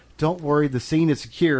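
ordinary talk

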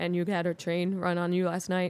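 put-on awkward voice. Imitating Jacob Williams telling an edgy joke: awkward Jacob Williams impression. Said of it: "Jacob being like".

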